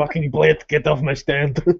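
Italian accent impression. Performing a quick bit during the chat, in an Italian accent impression. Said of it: "Good Italian impression there".

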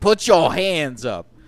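loud, slow penguin voice. Joking about penguins raiding their house: Samuel L. Jackson voice. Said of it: "I made him sound like Samuel L".

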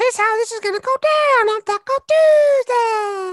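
squeaky, very high, loud puppet voice. Taking a turn in a round of different voices, doing an Elmo voice. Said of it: "here's Elmo, everyone".

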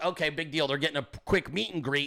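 usual speaking voice

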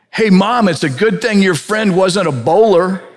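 put-on high-pitched, loud outside voice of an eight-year-old. Retelling a young son's remark to his mom at a casket, in a child's loud outside voice. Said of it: "said in his outside voice".

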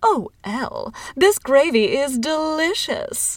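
high, very slow, very drawn-out cooing praise. Narrator reading a woman speaking at Thanksgiving dinner, cooing. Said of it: "cooed Mrs. Larson".

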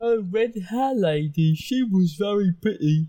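low, deep, slow, simple-sounding ogre voice. In a role-playing game, Uru the ogre answers the players, Uru the ogre voice. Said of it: "It's an ogre. ... And he smells really bad".

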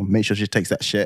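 ordinary talk

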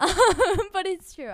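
high, loud laughing through the words.

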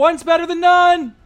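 shouting. Voicing a character calling from down below during battle: yelling. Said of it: "Tyler just yells".

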